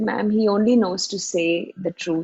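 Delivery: plain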